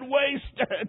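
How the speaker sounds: tearful, weeping, sobbing cry. Retelling a dying man falling back in bed: imitating sobbing. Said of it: "Then he sobbed and said".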